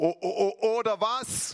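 trembling, nervous voice. Telling a joke, acting out the bartender's reply, imitating a trembling voice. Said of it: "mit zitternder Stimme sagt er".

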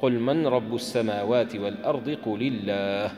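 normal talking voice

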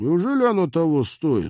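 very high, shrill, swooping, mocking sarcastic tone. The pilot, stung that his cooking failed to tempt his friend, asks sarcastically. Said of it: "саркастически поинтересовался пилот".

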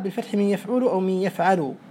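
ordinary talk

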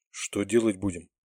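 perplexed, puzzled whisper. Narrator reading a character's question to his companion, puzzled whisper. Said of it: "озадаченно прошептал Сергей".

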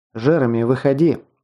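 ordinary delivery

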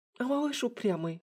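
whisper with a slight tremble. Watching a bleeding enemy keep attacking: slightly trembling whisper. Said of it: "слегка дрожащим голосом прошептала".

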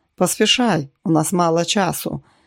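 ordinary delivery

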